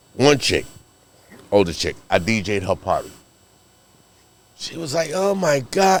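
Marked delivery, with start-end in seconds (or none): 5.2-6.0 put-on Jamaican woman's accent, higher. Retelling what an older party host said: imitating a Jamaican woman. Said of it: "Jamaican chick".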